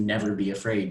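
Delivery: plain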